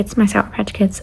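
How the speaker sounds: ordinary talk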